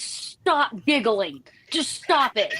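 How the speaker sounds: mock exasperated, slow, annoyed scolding. Retelling how their sparring instructor scolded them: imitating an annoyed instructor. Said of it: "our instructor would get so mad at us".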